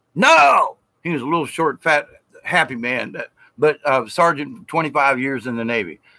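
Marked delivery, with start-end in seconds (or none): 0.2-0.8 high, loud shout. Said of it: "And he said".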